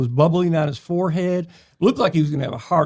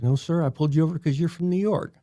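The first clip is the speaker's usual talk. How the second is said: normal talking voice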